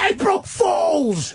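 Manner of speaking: drawn-out high-pitched scream. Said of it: "I scream".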